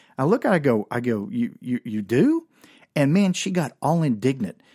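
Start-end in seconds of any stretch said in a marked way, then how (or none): 1.4-2.5 mock-surprised tone, surprise acted out. Speaker retells answering a woman's boast to him; retelling a surprised reply. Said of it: "that kind of caught me by surprise".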